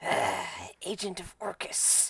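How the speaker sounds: slow, hushed, drawn-out whispered dragon hiss. A game master voices an ancient dragon snapping toward the little pseudo dragon: hissing dragon voice. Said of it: "and it hisses".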